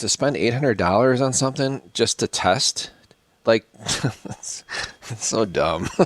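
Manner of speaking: words coming out through laughter. Speaker addressing viewers as 'guys', laughing while talking. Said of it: "I'm sorry I'm laughing about it".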